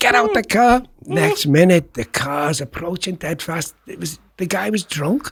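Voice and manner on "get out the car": mock urgent, pitched-up shout. Recounting a car incident, shouting to a man: retelling a shout. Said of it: "I'm shouting to the fella".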